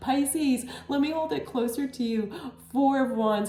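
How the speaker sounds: overjoyed, moved almost to tears.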